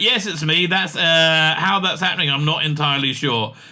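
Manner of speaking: normal talking voice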